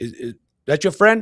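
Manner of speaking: halting, high-pitched, loud broken English. Retelling a scare in the ocean, quoting the lifeguard's broken English. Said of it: "he's like all in broken English".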